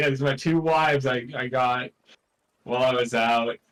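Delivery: ordinary talk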